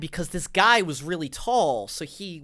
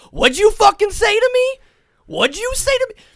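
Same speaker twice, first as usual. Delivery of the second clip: sudden zero-to-hundred shriek, very high, loud, angry; 11 dB louder than usual. Retelling how a man suddenly turned on someone, acting out a sudden yell. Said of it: "And then he yells like immediately".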